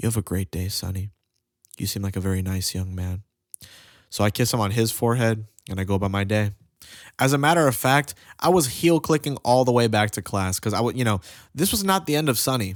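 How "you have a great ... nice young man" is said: put-on whisper, lower and quieter. Retelling what Mister Bill whispered in his ear: imitating Mister Bill whispering. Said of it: "he whispers in my ear, he goes".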